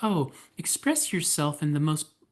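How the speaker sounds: mocking, soft gentle-parent style of talking. Mimicking a gentle parent who lets a child express anything: mocking a gentle parent. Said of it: "I am not making fun of you, gentle parents".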